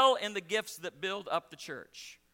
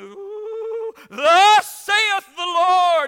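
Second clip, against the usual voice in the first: shrill, very high, loud, very slow, drawn-out cry; 11 semitones higher, 15 dB louder than usual. Imitating a sweet church woman suddenly prophesying: imitating a changed prophesying voice. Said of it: "she would change voices".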